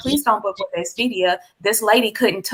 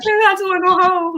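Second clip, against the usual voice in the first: acted very high weepy, tearful begging tone; 9 semitones higher than usual. Retelling begging a gate attendant for an early flight: retelling own crying plea. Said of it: "I was crying, y'all".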